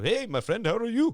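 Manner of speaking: exaggerated fake Indian accent. Explaining why stereotyped accents are off-limits, the speaker demonstrates a put-on Indian accent. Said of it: "most impersonal Indian accent".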